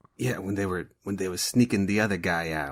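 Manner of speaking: quirky, odd put-on New York way of talking. Imitating a hooded character's way of talking: imitating a weird new york accent. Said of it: "a weird New York kind of thing".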